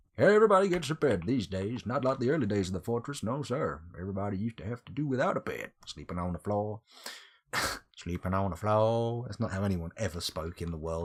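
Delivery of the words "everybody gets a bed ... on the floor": clumsy, bad, put-on American accent. Giving everyone in the fortress a bed, in a bad imitation American accent. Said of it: "me imitating an imaginary American person".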